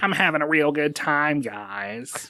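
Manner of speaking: drawn-out, deliberately bad delivery. Voicing Windows ten as Roger with glow sticks: shitty Roger impression. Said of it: "That's my shitty Roger impression".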